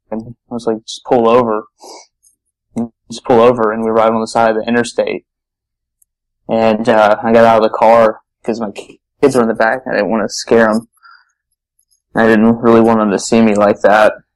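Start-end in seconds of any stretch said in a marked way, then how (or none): none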